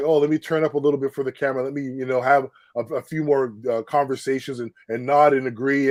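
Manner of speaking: normal talking voice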